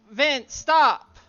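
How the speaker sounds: very loud shout, calling out. A player's character calls out to a companion who keeps chasing, calling out. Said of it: "Tsubasa's going to call out to him".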